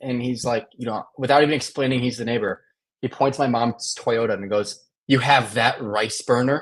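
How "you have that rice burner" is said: put-on anger, dead serious, much slower. Retelling how the neighbor at the door confronted the speaker's mom, imitating an angry neighbor. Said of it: "he was dead serious. He was, like, fucking pissed".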